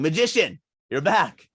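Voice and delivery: high, loud call.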